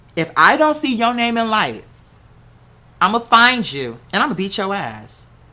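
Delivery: dead-serious, firm tone spoken with conviction. Retelling a teacher's warning after a performance: imitating someone speaking with conviction. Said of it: "Just like that".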